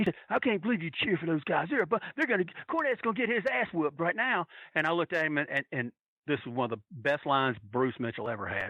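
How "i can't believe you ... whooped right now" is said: mock man's screaming, much higher. Retelling what a man in the crowd screamed during the match, imitating his screaming. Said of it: "he's screaming at us".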